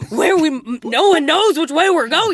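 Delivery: very loud, high screaming. Retelling the boat scene in Willy Wonka: imitating Willy Wonka screaming. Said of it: "before he's screaming at the end".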